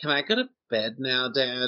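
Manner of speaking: put-on sulky preteen voice. Retelling a movie scene, imitating an angsty preteen. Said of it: "it was just angsty, like, preteen".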